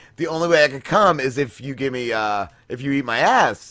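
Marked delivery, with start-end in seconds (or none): none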